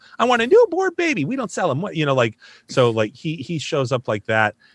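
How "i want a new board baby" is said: very high-pitched voice. Introducing his friend Dash from a musical, the speaker does Dash's high-pitched voice. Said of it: "the guy with the high pitch voice that pops up".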